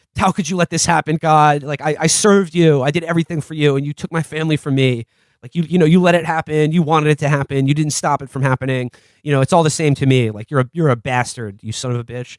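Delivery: put-on bitter, furious, accusing angry rant. Retelling a movie scene, acting out Brandt: imitating Brandt angry at God. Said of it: "he's angry at God".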